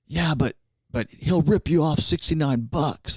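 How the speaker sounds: all-out, high-pitched screaming. Retelling a guy screaming from the back during an exhibition: imitating someone screaming. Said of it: "this guy screams".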